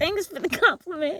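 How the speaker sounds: very high voice, stifling laughter. Reading out a funny comment and trying to say it without laughing: stifling laughter while talking. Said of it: "I'm gonna try and say it without laughing".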